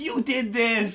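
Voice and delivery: mock, shrill, very high screeching scream. Retelling a comic scene where the wife accuses the husband: imitating a wife screaming. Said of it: "the wife starts screaming at the husband".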